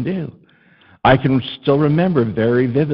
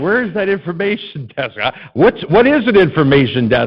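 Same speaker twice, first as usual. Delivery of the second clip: put-on play-acted weepy, tearful, frantic, distressed child's calling; 4 semitones higher than usual. A lost child called to the information desk, retelling screaming and crying. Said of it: "And I'm screaming and crying".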